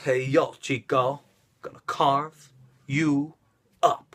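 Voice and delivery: very slow wrestler voice, every word drawn out, cool. Explaining why Razor Ramon is the coolest: Razor Ramon impression. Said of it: "He's like".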